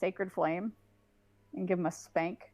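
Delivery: normal talking voice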